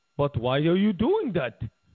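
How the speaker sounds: clumsy, bad, put-on German accent. Speaker voicing a country's reply to demands, in a bad german accent. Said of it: "that's not a good German accent".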